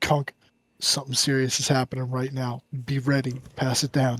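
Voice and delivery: very quiet, barely audible, hushed half-whisper. Acting out passing a warning to kunk down the line: in-character half-whisper. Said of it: "like, whisper, and I'm like".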